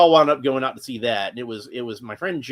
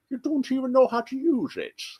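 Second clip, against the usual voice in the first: very high put-on villain voice; 12 semitones higher, 4 dB quieter than usual. Quoting a trailer line that sounds like Bane: Bane-like voice. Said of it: "it does sound a lot like Bane".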